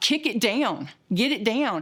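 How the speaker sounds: mock panicked, frantic yell. Recounting a door that would not open, retelling a panicked shout. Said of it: "I'm hearing yelling and, and panic".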